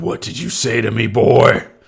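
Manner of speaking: loud, rough, enraged furious voice. Game narrator voicing a character confronting the players, angry. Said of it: "Calm down, calm down".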